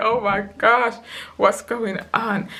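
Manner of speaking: acted weepy, bewildered, high crying voice in distress. Retelling a hospital stay in agony: retelling own crying. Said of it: "I just crying like".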